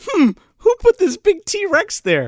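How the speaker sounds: high, slow, dopey musing voice. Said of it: "He goes".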